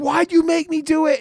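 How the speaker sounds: mock screeching outburst, very high-pitched shrieking scream. Retelling a man screaming at a kid who shot his friend: retelling someone screaming. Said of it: "he's like screaming at this kid".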